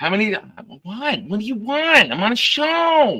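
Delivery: shouting. Answering someone who keeps pestering in the middle of a show, yelling. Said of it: "Nick's the one yelling at him".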